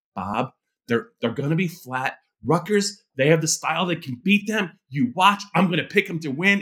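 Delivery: whispered, hushed speech. Retelling what the other speaker said on deadline: imitating someone whispering. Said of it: "you were kind of whispering".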